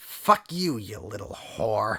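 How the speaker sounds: raging, furious yelled shout. Voicing a character who shouts back at a player, a furious shout. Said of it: "He shouts back in Draconic".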